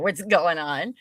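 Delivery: ordinary delivery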